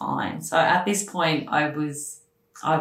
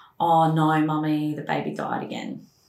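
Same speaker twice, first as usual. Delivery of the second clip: usual speaking voice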